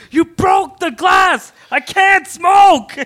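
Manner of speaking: mock very slow, high, drawn-out, furious shouting. Retelling a man in the park screaming at his girlfriend, retelling a man's angry yell. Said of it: "just yelling at her".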